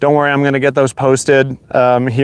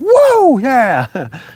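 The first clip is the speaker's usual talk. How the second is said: very high, thrilled, ecstatic shriek; 11 semitones higher than usual. Retelling getting out of the truck at a campsite: imitating own scream. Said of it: "I literally screamed".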